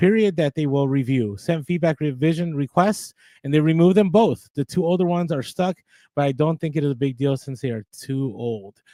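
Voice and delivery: plain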